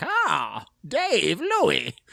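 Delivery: terrible shrill, creaky ghoul voice, swinging wildly in pitch. Picturing them walking into the room and being greeted, terrible Crypt Keeper impression. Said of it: "That was a terrible impression, but like it was like shrill".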